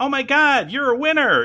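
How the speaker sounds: put-on very high, almost Valley Girl voice. Imitating how a woman talked, in an almost valley girl voice. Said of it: "she goes into this almost, I want to say almost Valley Girl".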